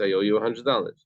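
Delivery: ordinary delivery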